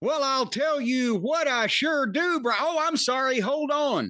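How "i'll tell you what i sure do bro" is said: mock shouting, higher pitch. Pretending to be hard of hearing in an ad read: yelling as a joke. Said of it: "I know I'm yelling".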